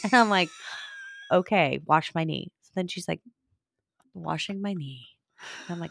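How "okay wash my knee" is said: normal talking voice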